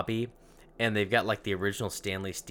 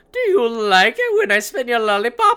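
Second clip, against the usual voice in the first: put-on very high, shrill, loud, old-fashioned child voice; 12 dB louder than usual. Describing an apparition spinning a lollipop at them, old-timey child voice. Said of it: "that's how old-timey children talk to me".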